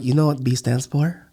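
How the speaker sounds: put-on Filipino accent. Retelling the speaker's mom's reaction to a grade, in a filipino accent impression. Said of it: "That's her Filipino accent".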